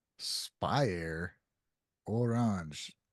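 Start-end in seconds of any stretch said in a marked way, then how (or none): 2.1-2.9 put-on orange pronounced with a French accent. Listing songs in a ranking: French accent on 'Orange'. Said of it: "I said Orange with a French accent".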